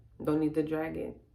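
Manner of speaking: ordinary talk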